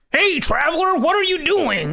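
forced, strained, very high put-on character voice. Imitating how the voices sound: strained put-on voice. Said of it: "they sound just like a guy straining his voice to do a voice".

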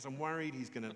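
normal talking voice

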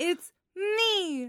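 rising from the bottom into head voice, "me" drawn out. Reading the title once more, urged on: raised head voice from the bottom up. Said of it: "From the bottom up".

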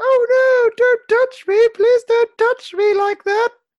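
very high, loud, shrill falsetto, only faintly Scottish. Retelling what she said to a guy, in a Mrs. Doubtfire falsetto voice. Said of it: "in falsetto and less Scottish".

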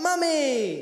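word called out lightly, like a cue. Showing the group what to shout when they hear Mary, shouting. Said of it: "put our hands up in the air and shout".

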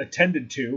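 plain reading voice

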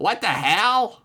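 pitched way up, sudden outcry, popped out high. Showing a perfect David Lynch impression. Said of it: "You wanna hear my perfect David Lynch impression?".

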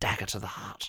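soft, breathy, mournful grieving whisper.

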